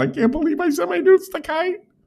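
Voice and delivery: very high, girly put-on voice. Imagining how the other speaker would talk, in a girly voice. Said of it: "I've never heard you talk like girly at all".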